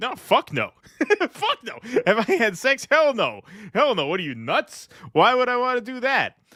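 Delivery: very high, brimming with pride, swooping. Retelling how the guy answered the sex question: imitating someone answering proudly. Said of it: "he says it with such pride".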